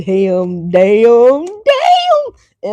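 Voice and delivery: big, loud, animated, swooping, repeated belted-out exclamations. Talking to Leos, the speaker slips into their Martin voice. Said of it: "In my Martin voice".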